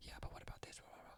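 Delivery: hushed, breathy, very quiet whisper. Retelling how someone at a meeting raised a point: imitating someone whispering. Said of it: "somebody just whispers, like".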